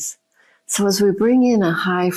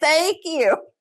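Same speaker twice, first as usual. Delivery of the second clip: very high, furious, top-of-the-lungs screaming rage; 10 semitones higher than usual. Retelling shouting thanks at a bent fork: imitating her own furious screaming. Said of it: "I'm screaming at the top of my lungs".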